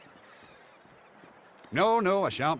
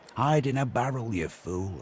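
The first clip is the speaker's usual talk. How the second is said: normal talking voice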